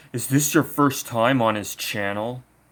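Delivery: put-on condescending tone. Quoting a weirdo who chimed in on a channel, mock-condescending. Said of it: "this weirdo right here condescendingly says".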